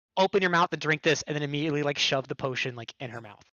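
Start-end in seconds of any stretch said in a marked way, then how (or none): 0.1-1.2 urgent, shouted, forceful yell. A game player acting out their character's line, yelling at someone. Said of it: "I want to yell at May".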